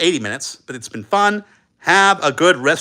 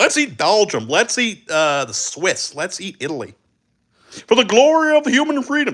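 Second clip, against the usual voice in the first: dripping, sarcastic, put-on mocking voice; 3 semitones higher than usual. Mocking how a republic justifies conquest: sarcastic mock voice. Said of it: "being sarcastic here".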